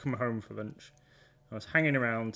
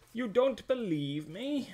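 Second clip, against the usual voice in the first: acted, very high, affronted, indignant voice; 11 semitones higher than usual. The speaker retells callers who were told they weren't believed: mock-indignant caller. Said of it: "they got most indignant".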